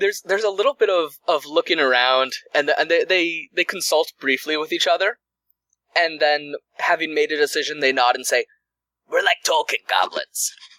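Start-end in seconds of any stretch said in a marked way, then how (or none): 9.1-10.5 put-on goblin creature voice with Brooklyn accent. Voicing the goblins answering the players' question about what goblins they are: Brooklyn-accented goblin voice. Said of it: "we're like from Brooklyn or something".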